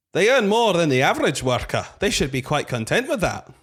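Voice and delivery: Scottish accent. Asked to read a line in a regional accent, speaking in a Scottish accent. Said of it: "We're going up to Scotland for this one".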